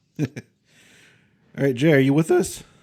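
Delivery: cracking, breaking voice. Checking whether a participant is still with the group, voice cracking. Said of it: "my voice cracked".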